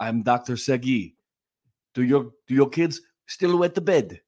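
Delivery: put-on Israeli-accented voice. Parent acting out a bed-wetting doctor addressing parents, imitating Dr. Segi, Israeli accent. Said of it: "A good Israeli accent".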